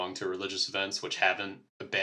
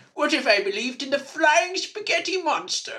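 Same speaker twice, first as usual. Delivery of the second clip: put-on superior British accent, higher and louder; 9 dB louder than usual. Mocking Richard Dawkins to another speaker: Richard Dawkins impression. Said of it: "put on British, um, superiority accent".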